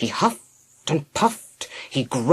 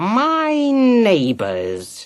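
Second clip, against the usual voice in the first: growling snarl, pitched up and swooping; 7 semitones higher than usual. Narrator reading the Spider's reply to Nat, snarling. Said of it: "he snarled".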